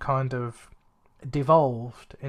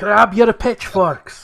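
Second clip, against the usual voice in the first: put-on loud, high-pitched, yelled, terrible Scottish ogre accent; 8 semitones higher, 11 dB louder than usual. Speaker quotes Shrek mid-conversation, in a bad Shrek accent. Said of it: "so sorry, terrible accent".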